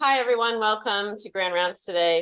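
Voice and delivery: coach-style swim coach voice. Opening Grand Rounds and greeting everyone: loud swim coach voice. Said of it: "I'll try to use my swim coach voice here".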